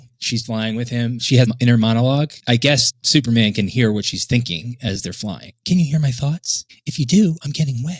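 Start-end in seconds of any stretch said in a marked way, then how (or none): 5.7-8.0 put-on shivery little girl voice, higher pitch. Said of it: "Like a little girl shivering".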